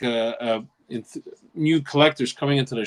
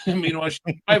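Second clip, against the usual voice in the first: usual speaking voice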